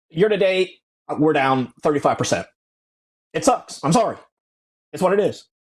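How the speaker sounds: high, indifferent, offhand voice. Doing an impersonation of a fund manager admitting losses: Ross Gerber impersonation. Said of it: "my Ross Gerber impersonation".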